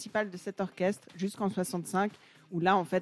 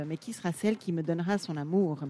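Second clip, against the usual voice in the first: plain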